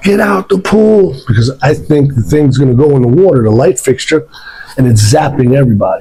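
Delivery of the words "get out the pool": mock high, drawn-out scream. Retelling how he screamed at a girl in a pool: imitating someone screaming. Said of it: "I'm screaming at the girl".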